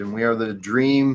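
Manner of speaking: ordinary talk, nothing marked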